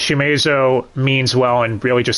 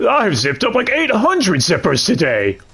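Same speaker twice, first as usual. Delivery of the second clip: put-on, pitched-up old codger voice; 8 semitones higher than usual. Discussing a show's voice cast, the speaker imitates the old guy character: imitating an old man. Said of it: "voicing the old guy who's like".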